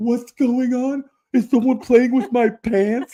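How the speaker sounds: loud, high voice with rising intonation. Retelling the accuser's story mockingly: imitating Adams. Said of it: "He's all".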